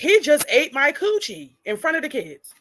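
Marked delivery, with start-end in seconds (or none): 0.0-1.6 mock high-pitched screaming. Retelling what a mother screamed on a live stream: imitating someone screaming.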